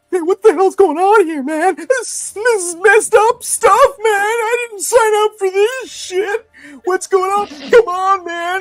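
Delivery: distressed, at wit's end humanoid voice. Voicing a humanoid moving away from a player: humanoid at wit's end. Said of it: "This voice sort of moving away from you".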